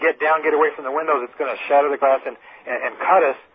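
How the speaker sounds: ordinary delivery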